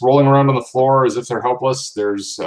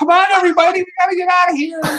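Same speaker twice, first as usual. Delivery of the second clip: put-on very high, shrill child's yell with voice breaking. Playing a 15-year-old giving a big speech, shrill kid yelling, voice breaking. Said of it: "I just sound like a little shrill kid yelling".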